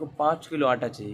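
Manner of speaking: ordinary talk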